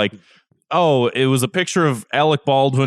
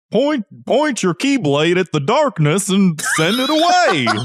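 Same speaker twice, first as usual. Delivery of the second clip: high, slow cartoon duck voice; 8 semitones higher than usual. Quoting a Kingdom Hearts line about the keyblade: Donald Duck voice. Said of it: "That's the best Donald Duck impression I can do".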